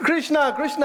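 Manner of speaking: high-pitched shouted voice, loud and carrying.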